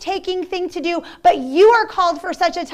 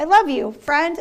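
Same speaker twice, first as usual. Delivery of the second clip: ordinary talk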